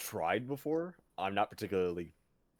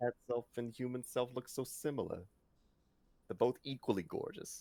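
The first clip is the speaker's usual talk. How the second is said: put-on, pitched-up New York accent; 5 semitones higher, 3 dB quieter than usual. The speaker redoes the line, switching to a new york accent. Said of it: "I'm gonna change this to New York accent".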